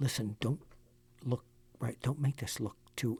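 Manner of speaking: urgent, hushed, soft half-whisper. Addressing Josh during a show segment, half-whispering. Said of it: "I'm whispering".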